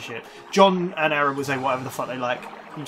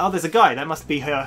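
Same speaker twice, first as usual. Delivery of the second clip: usual speaking voice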